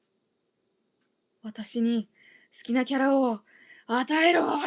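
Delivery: put-on furious, raging voice. Retelling her own past rage at not getting a character: imitating her own past rage. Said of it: "内 な る 怒 り が".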